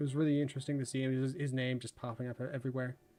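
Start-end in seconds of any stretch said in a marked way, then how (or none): 0.0-1.2 very fast, rattled-off talking. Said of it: "I get talking really fast".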